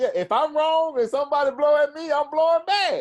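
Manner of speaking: high, loud, heated, defiant, insistent tone.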